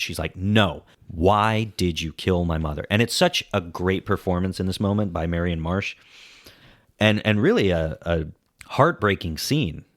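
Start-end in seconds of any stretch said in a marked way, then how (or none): 0.3-2.9 mock defiant tone, having none of it. Recapping a movie's big scene, retelling a character's defiant refusal. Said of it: "She she's having none of it".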